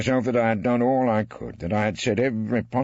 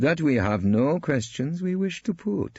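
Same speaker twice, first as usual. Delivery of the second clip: very cheeky tone, pitched up; 5 semitones higher than usual. Narrating a courtroom scene as counsel answers the judge, Taboro's cheeky voice. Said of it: "in his most cheekly voice".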